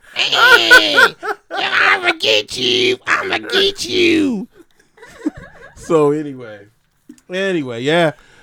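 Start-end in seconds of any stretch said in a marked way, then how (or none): 0.2-4.5 put-on very high, shrill, drawn-out old woman voice. Voicing what he says while being kept waiting at the green, imitating an old woman's voice. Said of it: "He sounds like an old woman".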